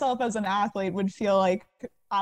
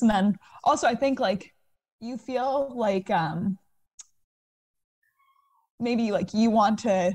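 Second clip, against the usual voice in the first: getting emotional, slow words. Describing past arguments and obstacles to a listener, getting emotional. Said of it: "I feel like I'm getting emotional about this".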